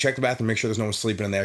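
ordinary delivery

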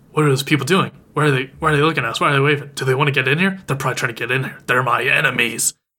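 put-on panicky, freaking-out dog voice. Retelling an episode where the dog starts freaking out: imitating Muko freaking out. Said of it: "Muko starts freaking out".

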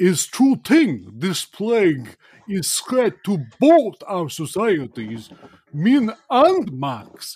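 giant bug character voice, high, swooping, sing-song. Game narrator voicing a human-sized flea speaking to the party: Sanguinitsky, human-sized flea voice. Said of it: "And it should be noted that [name] is proudly a flea. He is a big one. He's like human sized".

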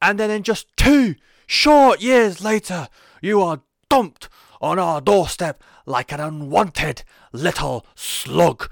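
put-on loud, high Geordie accent. The speaker quotes Neville addressing Enzo, in Neville's Geordie accent. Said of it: "I'm going to do the accent".

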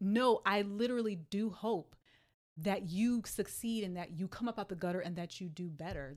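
ordinary talk

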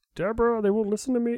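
high, put-on ghostly father voice. Improvising a gritty Ghost Dad reboot, playing the ghost father: put-on ghost-dad voice. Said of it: "It's the only voice I can do tonight".

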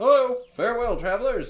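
loud, high-pitched shout. Voicing a man atop a balcony calling down to approaching travelers: yelling greeting. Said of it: "The man in the conical hat yells out".

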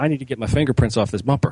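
plain

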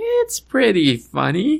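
voice rises very high on "pretty funny". Re-saying an earlier remark to show the voice went up: pitch rising on pretty funny. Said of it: "my voice went up a little bit".

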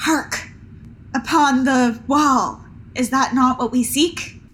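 hushed stage whisper. Half-whispering to another character as subtly as possible: half-whispering. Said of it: "whisper to Ultra".

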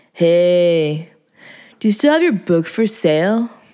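lazy, flat, level monotone drawl. A random guy approaches a woman selling magazines, monotone drawl. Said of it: "he asked in a monotone drawl".

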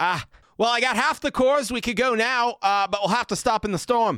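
frightened shouting.

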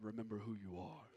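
clumsy, very low, rough, fatherly rumbling lion voice. Speaker retelling Simba looking up to the stars, doing a bad Mufasa impersonation. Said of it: "it's a bad impersonation".

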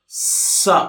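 high snake-person voice.

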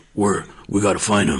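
forced, throat-straining masked vigilante voice, pushed hard. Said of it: "you're gonna hurt your throat".

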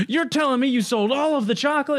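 very high, frantic, panicked voice full of disbelief. Retelling the gas station chocolate scene: imitating Charles Grodin freaking out. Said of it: "And he's just freaking out".

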